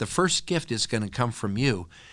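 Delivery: ordinary delivery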